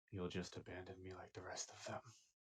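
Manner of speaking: very quiet, barely voiced half-whisper under the breath. Game master voicing Durakar, who speaks so only one player hears, very quiet half-whisper under breath. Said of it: "very quietly whisper under his breath".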